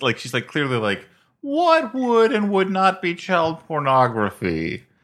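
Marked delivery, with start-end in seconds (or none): 1.4-4.8 very high, slow voice with swooping pitch. Retelling a movie scene, quoting a character: Judy Greer impression. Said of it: "Was that your Judy Greer impression?".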